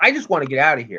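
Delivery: mock sarcastic tone. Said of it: "Matt's, of course, sarcastic".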